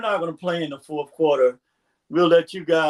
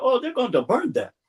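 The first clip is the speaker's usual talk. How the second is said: put-on thick Nigerian accent; 6 semitones higher than usual. Retelling what a man he thinks was from Nigeria said: thick Nigerian accent. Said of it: "in that thick accent".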